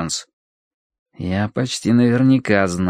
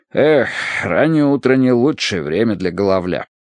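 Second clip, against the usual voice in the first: plain reading voice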